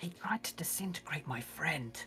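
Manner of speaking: quiet whispering. Voicing a character telling the party about a conflict: whispering. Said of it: "she just whispers".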